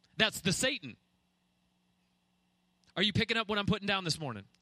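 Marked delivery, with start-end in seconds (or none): 3.0-4.4 fast, rushed, preaching tone. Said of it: "I know I'm speaking fast".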